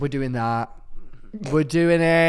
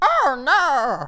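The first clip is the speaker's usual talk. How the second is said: very high, squeaky cartoon alien voice; 12 semitones higher than usual. Admitting none of them have seen Star Wars, trying a Jar Jar Binks voice. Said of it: "my Jar Jar Binks impression".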